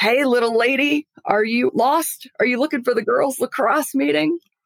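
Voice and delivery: big, loud booming voice, projected far. Speaker retells her future head coach calling out to her at thirteen, big booming voice. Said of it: "this big booming voice comes out and says".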